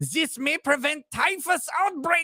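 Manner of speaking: put-on German accent. Reading an online comment aloud, in a German accent. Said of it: "in German accent".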